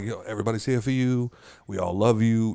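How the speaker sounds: soft, hushed, intimate half-whisper up close. Retelling words said softly to a child during happy birthday: imitating half-whispering. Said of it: "whispering stuff to him".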